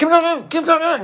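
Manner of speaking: desperate, very high, pleading, drawn-out call. Re-enacting calling after someone walking away: re-enacting a desperate call. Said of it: "I'm more desperate".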